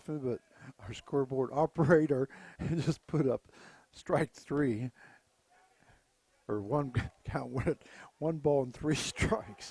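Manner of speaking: words broken up by giggles. Baseball announcer correcting the count on the scoreboard, laughing while talking. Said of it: "I'm sorry that I'm laughing".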